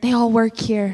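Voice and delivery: put-on quiet whisper. Retelling mom's reply at a restaurant: imitating mom's quieter whisper. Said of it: "whispered a little bit quieter".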